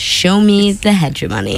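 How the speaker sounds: usual speaking voice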